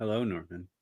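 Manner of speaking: hushed, very quiet, eerie, creepy tone. Greeting a listener in the chat: creepy-sounding greeting. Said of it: "That was a little creepy".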